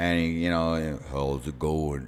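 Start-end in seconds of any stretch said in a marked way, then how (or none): 1.1-2.1 horrible, very low, deep voice, done badly. Retelling how Sam Elliott greeted you outside the building, in a bad Sam Elliott impression. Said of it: "I do his voice horrible".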